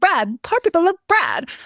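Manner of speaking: very high, goofy, swooping, silly sing-song voice. Showing the voice used with a sister since childhood, in a put-on joke voice. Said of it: "I've been talking in this voice".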